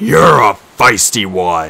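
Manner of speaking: deep, loud, bellowing monster voice. Narrator reading a monster below the ledge addressing a captive, deep bellowing voice. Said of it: "the deep voice bellowed".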